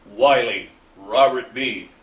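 very loud, annoyed, irritated calling out. Retelling how a man called out his name before he saluted: imitating an irritated voice. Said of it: "was rather in a irritated voice".

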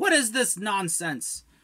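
very high, furious, angry shouting. Voicing someone knocking aggressively on a door from the other side: angry yelling through a door.

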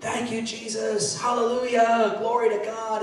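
exultant, joyful, loud shouting. Recounting driving home after being baptized, acting out shouting praise. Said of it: "I started just shouting".

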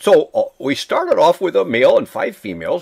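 ordinary delivery

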